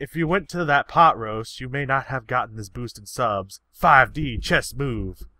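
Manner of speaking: ordinary delivery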